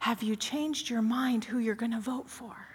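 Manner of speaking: imitated whisper. Retelling a phone call from their mother: imitating mother whispering. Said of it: "she's whispering to me".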